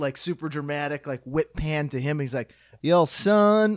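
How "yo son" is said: put-on cartoon rooster voice with southern accent. Imitating a TV promo line, in a Foghorn Leghorn voice. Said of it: "he speaks like Foghorn Leghorn".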